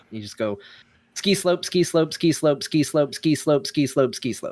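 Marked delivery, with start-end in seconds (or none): 1.1-4.5 ski slope repeated over and over, high, tongue-twister style. Showing how to say a tongue twister: fast tongue twister. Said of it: "Another hard one is ski slope".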